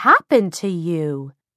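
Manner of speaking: tut-tutting, reproachful, disapproving tone. A woman questions a girl about what happened to her, disapprovingly. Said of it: "She asked disapprovingly".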